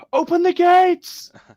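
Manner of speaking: loud yell, pitched very high. Voicing a guard who yells in a player's face: yelling in character. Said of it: "yells in your face, and he goes".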